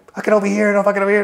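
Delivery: very high panicked outburst. Retelling how the lieutenant sounded at first: imitating someone flipping out. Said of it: "he was just flipping out".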